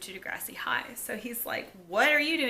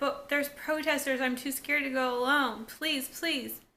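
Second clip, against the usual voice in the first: put-on begging voice; 4 semitones higher than usual. Recapping a scene where Erica begs someone to come along, imitating Erica pleading. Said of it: "Erica just starts pleading with her".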